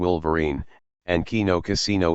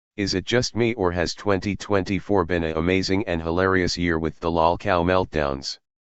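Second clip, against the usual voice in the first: normal talking voice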